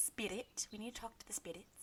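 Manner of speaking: put-on Scottish accent. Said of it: "I love the way she says".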